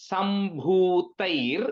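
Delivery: very slow, split syllable by syllable. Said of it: "you break it".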